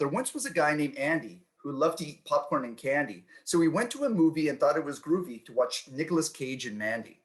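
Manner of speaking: ordinary talk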